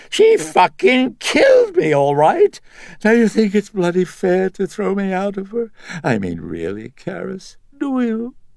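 very high voice, cracking, wavering and swooping. Reading a story, voicing a speaker addressing Karis in a cracking, high-pitched voice. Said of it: "The voice cracking and high-pitched".

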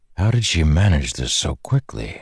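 plain

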